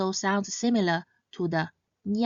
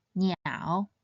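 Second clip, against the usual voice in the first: niao said with the low third-tone dip; 3 dB quieter than usual. Explaining how to read a character: niao in third tone. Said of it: "It should be read in the third tone".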